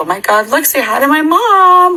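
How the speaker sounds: very high, frantic, rising, freaked-out voice. Retelling a scary night, imitating a freaked-out self. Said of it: "like, tweaking".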